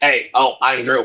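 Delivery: put-on robotic voice. Imitating another speaker named Drew: robotic voice imitating Drew. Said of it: "are you trying to say that I have a robotic voice".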